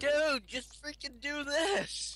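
mock yell, high-pitched and slow.

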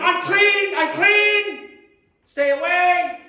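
mock, high, loud, slow drawn-out scream. Telling of a leper coming to the edge of town, retelling a leper's screaming. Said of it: "He's screaming".

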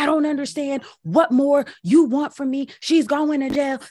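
high-pitched yelling. Recounting what a radio host said on his show: imitating Andy yelling. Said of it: "starts on his radio show yelling".

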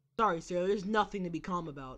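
ordinary talk, nothing marked

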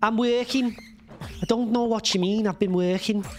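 Liverpool accent. Speaker tries out a Scouse accent after asking how to get into it: Scouse accent. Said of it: "That's like Scouse".

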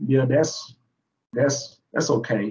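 slow, dry, mock-agreeable sarcastic tone. Answering a reason given for diversifying fields, sarcastic. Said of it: "that's me being sarcastic".

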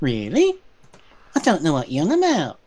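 imitated nasal twang. Imitating Bev's incredulity: Bev's nasal twang impression. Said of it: "that god-awful nasal twang of his".

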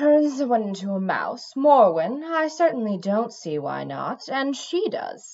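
listless, bored, uninterested, can't-be-bothered delivery. Urging someone to turn another into a mouse, in a bored tone. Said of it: "Jasmine said in a bored tone".

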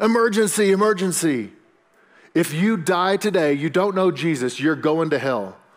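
put-on loud, high, drawn-out scream at full voice. Retelling how a man stood on a restaurant table: imitating someone screaming loudly. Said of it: "he would scream at the top of his voice".

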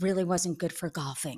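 quiet low whisper. Speaker retelling the explanation a busted man gave at the time, whispered quote. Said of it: "in a whisper".

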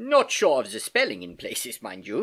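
plain reading voice

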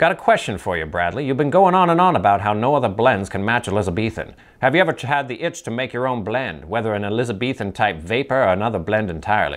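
put-on thirties transcontinental gangster accent, old-timey mobster voice. Reading out a question from someone who asked for an old-timey mobster voice. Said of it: "He asked for an old-timey mobster voice".

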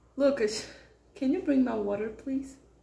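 soft, winded, breathless, catching breath between words. Asking someone to bring over the water, out of breath. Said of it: "I'm out of breath".

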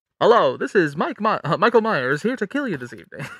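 loud news-anchor announcer delivery. Speaker recounts a parody clip, voicing the killer character's line in Tom Tucker voice. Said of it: "But it's like the Tom Tucker voice".

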